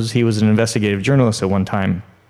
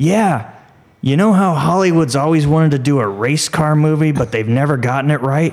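put-on elderly man's voice, pitched high; 5 semitones higher than usual. Telling a story, speaker imitates a man across the room in an old man's voice. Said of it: "comes this old man's voice going".

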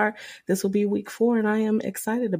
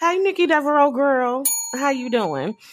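high, put-on diva voice; 5 semitones higher, 4 dB louder than usual. On a show, greet a friend of the show in a shout-out, in a Wendy Williams voice. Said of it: "In my Wendy Williams voice".

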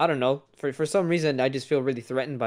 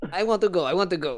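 put-on Russian accent, much higher; 5 semitones higher than usual. Telling about a man who wanted to get on the board, imitating his Russian accent. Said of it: "he had a Russian accent".

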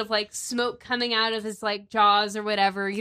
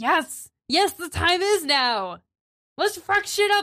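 rowdy, excited goblin voice, much higher; 7 semitones higher than usual. Game master voices one goblin replying to another: excited goblin voice. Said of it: "they're goblins, you know, they're very excited".

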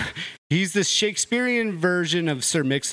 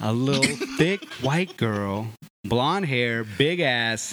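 slow deliberate delivery, each word spaced out; 5 semitones lower than usual. Repeating the line after another speaker asks: said slower. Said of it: "say it slower".

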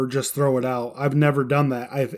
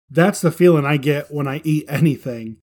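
usual speaking voice

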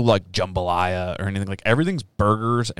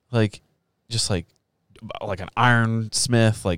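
normal talking voice

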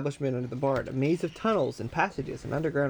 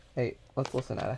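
plain reading voice

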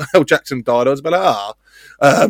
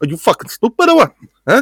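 put-on angry shout, pitched much higher; 7 semitones higher than usual. Telling a story about meeting Robert De Niro, imitating Robert De Niro angry. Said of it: "Robert De Niro at his angriest".

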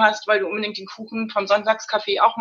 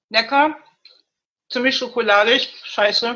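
talking with mouth full, chewing and smacking. Eating on the show after apologizing for smacking, chewing while talking. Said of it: "Entschuldigung, ich muss schmatzen".

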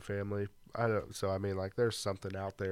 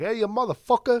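put-on tough Italian accent, higher and louder; 12 dB louder than usual. Joking about passing as Italian if he wore a chain: acting like a tough Italian guy. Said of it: "I could have been Italian. I could be like".

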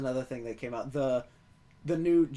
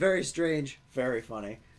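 ordinary talk

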